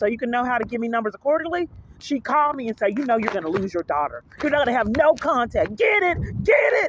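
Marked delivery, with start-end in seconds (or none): 3.0-6.9 acted-out scolding, swooping, rising mild yell. Retelling what a caseworker said on the phone: imitating someone yelling. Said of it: "Yelling at me like that".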